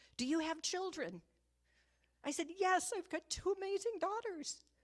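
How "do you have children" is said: demanding, half-yelled delivery. Retelling what a man yelled at the speaker, retelling a man's yell. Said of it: "yelled at me".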